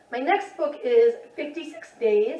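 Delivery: slow voice, cracking and breaking mid-phrase. Speaker introduces the next book for the challenge, voice cracking. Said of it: "my voice just cracked".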